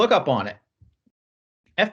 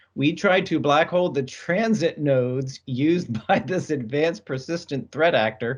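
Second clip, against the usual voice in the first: slow delivery broken by laughter. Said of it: "Sorry for laughing".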